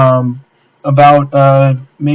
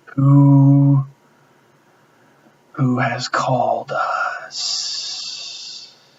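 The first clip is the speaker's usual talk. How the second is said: hissing creature voice, much quieter; 8 dB quieter than usual. Game master voicing a creature that addresses the party, hissing creature voice. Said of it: "it says it in a hissing voice".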